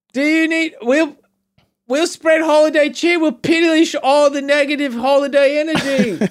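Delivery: put-on very high-pitched, vague half-Australian accent. Playing a scary-looking raider who says they are not pillaging today, in a kind of australian accent. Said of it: "now you're kind of Australian".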